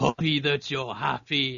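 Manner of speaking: bad put-on big-monster voice. Answering someone who asked for your thoughts, turning into Hulk with a terrible Hulk impression. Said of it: "that's a terrible impression".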